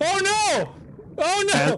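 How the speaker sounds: shrill, very high, panicked screams. Running out of oxygen while trying to reach the surface, screaming in panic. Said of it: "but you were screaming so much".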